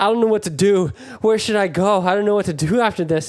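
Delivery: mock freaked-out child voice, frantic and panicked, at a loss. Speaker retells a kid asking a caterer what to do: imitating a panicking kid. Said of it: "So this kid was freaking out".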